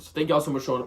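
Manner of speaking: talking too fast.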